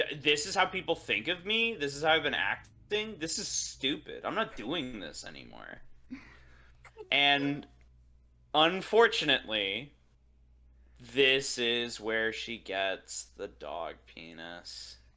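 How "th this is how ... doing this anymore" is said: put-on exasperated, fed-up, swooping outburst. Quoting a character fed up with herself: imitating frustrated Jade. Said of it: "she just gets frustrated".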